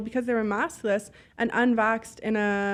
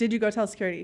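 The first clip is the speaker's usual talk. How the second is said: acted serious, firm, no-nonsense tone. Retelling confronting a guy about telling security, retelling a means-business tone. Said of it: "I mean business".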